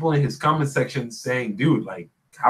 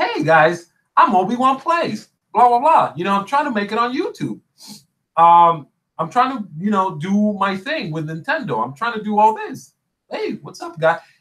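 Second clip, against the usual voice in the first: humble, likable tone, higher pitch; 6 semitones higher than usual. Imitating a YouTuber's friendly intro: imitating Obi-Wan Plays, smiley. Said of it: "very smiley guy, very likable".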